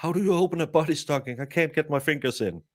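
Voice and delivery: mock frantic, half-panicked, screaming voice. Storyteller acting out what a man screamed up at the group, retelling a panicked scream. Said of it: "almost in panic screams".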